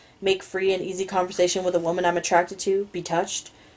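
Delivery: ordinary delivery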